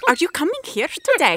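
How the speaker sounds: put-on loud, high-pitched, belted Scandinavian accent. Speaker demonstrates how characters speak English on the show, Norsemen show accent. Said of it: "they speak English in accent".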